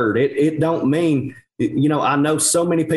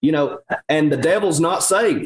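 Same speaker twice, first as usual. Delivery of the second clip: ordinary talk, nothing marked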